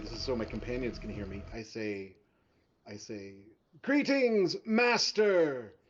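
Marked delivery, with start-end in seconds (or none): 3.8-5.6 very loud than it needs, high. A player voices their character greeting the master so companions hear, much louder than necessary. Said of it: "I say actually much louder than is necessary".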